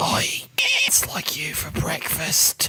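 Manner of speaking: creature voice, entirely whispered. Voicing a creature that looks at a player, then speaks: creature whispering. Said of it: "and then it whispers".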